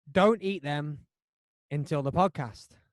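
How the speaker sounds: ordinary talk, nothing marked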